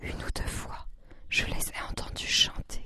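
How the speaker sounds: hushed, whispered voice. Narrator reads Grandmother answering a question put to Granny, whispering.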